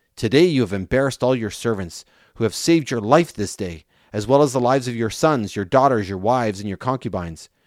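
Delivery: ordinary delivery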